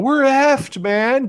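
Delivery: play-acted full-on panic yell, pitched way up. Retelling Paxton's panicked lines: imitating Paxton shouting in panic. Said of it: "he's just shouting".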